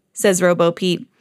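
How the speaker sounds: ordinary delivery, nothing marked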